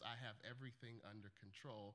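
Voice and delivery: utterly calm pilot-announcement voice, low and soft. Speaker retells the captain's announcement over the plane intercom, imitating a very calm captain. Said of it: "in one of the most calm voices imaginable".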